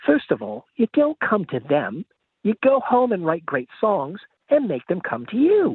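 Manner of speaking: bad put-on British accent, high and swooping. Retelling what a man told the speaker and his brother, bad British accent. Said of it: "my terrible British accent".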